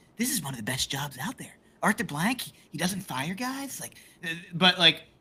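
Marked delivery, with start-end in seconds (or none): 0.2-3.8 fake broadcast commentator voice. Describing how the media talked about the job, Peter Schrager voice. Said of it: "I'm doing my Peter Schrager voice".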